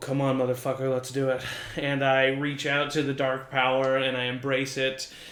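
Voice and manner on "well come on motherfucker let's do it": muttered under the breath, quiet and faster. Player describes gazing into the abyss and speaks as his character, muttered under breath. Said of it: "I kind of say under my breath".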